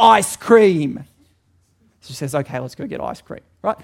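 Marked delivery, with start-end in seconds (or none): 0.0-1.0 put-on child's yell, higher and louder. Telling a story about a kid who wants ice cream, retelling his yell. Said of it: "And he yells".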